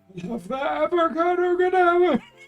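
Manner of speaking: put-on shouting dark wizard voice. Joking about ordering at a cafe: Voldemort shouting. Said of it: "Voldemort, you don't have to shout".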